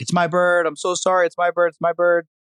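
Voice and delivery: yelling, pitched high.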